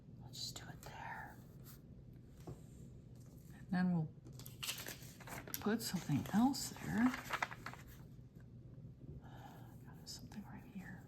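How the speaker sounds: very quiet, barely audible whisper to oneself. Talking to oneself while working in a planner: whispering. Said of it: "sorry, I'm whispering".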